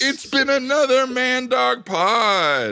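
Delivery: very high-pitched shouting, "pod" drawn out. Signing off another episode of the podcast to listeners, yelling. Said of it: "I don't know why I'm yelling".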